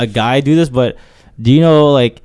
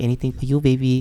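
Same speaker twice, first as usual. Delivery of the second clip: cutesy, sugary sweet, lovey-dovey tone; 9 dB quieter than usual. Acting out a couple talking in public: put-on sweet voice. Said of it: "sweet voice".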